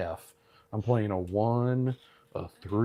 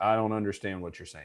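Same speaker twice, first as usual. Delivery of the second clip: normal talking voice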